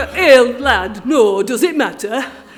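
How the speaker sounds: very loud, very slow put-on Yorkshire accent. Retelling a reply to an Australia Day official, Yorkshire accent. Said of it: "In my best Yorkshire accent".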